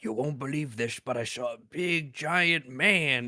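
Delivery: put-on aged old man voice. Praising the movie's townspeople, imitating an old man's voice. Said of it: "really good old man voice actors to be like".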